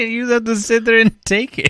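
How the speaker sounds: laughing hard while talking. Explaining to another speaker why a story is funny, crying with laughter. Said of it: "I'm crying".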